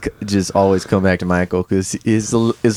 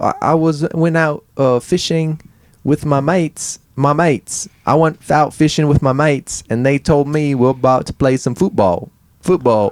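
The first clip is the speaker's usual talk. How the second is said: very slow, high, attempted put-on British accent; 6 semitones higher than usual. Trying to be British for the other speaker, in a put-on British accent. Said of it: "doesn't it sound British?".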